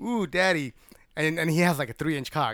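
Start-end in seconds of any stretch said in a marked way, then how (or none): 0.0-0.7 higher-pitched put-on mocking flattery. Acting out a wife mocking her husband: imitating mocking praise. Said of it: "That's mocking him".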